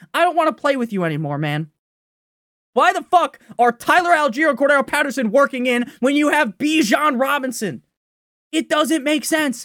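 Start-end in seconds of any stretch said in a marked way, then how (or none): 2.7-9.6 raised, shouting voice. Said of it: "Sorry for yelling".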